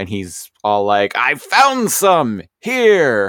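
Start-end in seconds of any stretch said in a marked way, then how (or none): 1.2-3.3 mock giddy, very high, very slow sing-song. Speaker acts out a character whose scanner finds Energon: mock-excited. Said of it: "he gets all excited".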